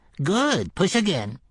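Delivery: high, mechanical, machine-like, encouraging voice. Narrator reading a novel voices a line spoken to the gunslinger, encouraging mechanical voice. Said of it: "the mechanical voice encouraged".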